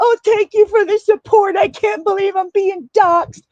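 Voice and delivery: put-on tearful sobbing, very high-pitched. Retelling how someone reacted on a panel: imitating someone crying. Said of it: "goes up on a panel and is crying".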